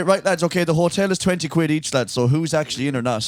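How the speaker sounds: ordinary talk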